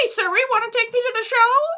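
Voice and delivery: very high, over-the-top squeak, rattled off fast. Describing a character they played, showing a squeakier version: over-the-top squeaky voice. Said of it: "but like kind of squeaky".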